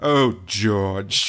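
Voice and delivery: low, deep, crestfallen, dejected, let-down tone. Retelling behind-the-scenes footage of a fanged Yoda model: imitating dejected Christopher Lee. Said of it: "a dejected Christopher Lee being like".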